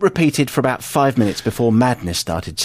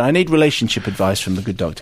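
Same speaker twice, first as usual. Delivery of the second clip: ordinary talk, nothing marked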